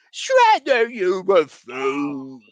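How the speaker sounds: very loud, bellowing, swooping cartoon voice. Showing a favorite party trick: Pat Fraley Krang voice. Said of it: "the Pat Fraley Krang".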